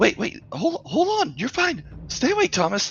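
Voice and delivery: frantic, panicked, very high-pitched, swooping pleading. Voicing a panicking character urging a wounded man to stay awake: panicked pleading. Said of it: "Jeneth was starting to panic".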